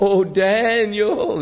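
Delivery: very high wailing lament with a name drawn out. Retelling scripture, acting out the king calling to Daniel, retelling a lamenting cry. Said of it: "he cried in a lamentable voice".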